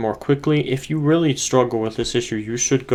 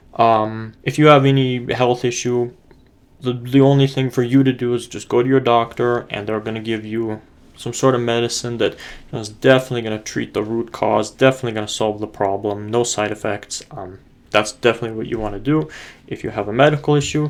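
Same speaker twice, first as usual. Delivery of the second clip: ordinary talk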